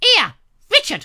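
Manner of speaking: shrill, very high-pitched, loud screech. Retelling an invitation from Cynthia, imitating Cynthia's screeching voice. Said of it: "'cause she speaks like that".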